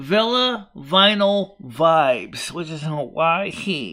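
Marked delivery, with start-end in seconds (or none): 0.0-2.5 slow, deliberate, carefully spaced-out words. Speaker repeats a company name they said too fast, slow and deliberate. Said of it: "I'll say it slower".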